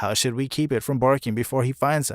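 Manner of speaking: normal talking voice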